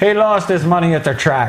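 put-on bad old theatrical English accent.

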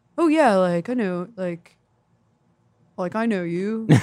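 very slow, drawn-out college frat bro voice. Recalling a class partner from college, imitating a frat guy. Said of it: "That's my impression of frat guys".

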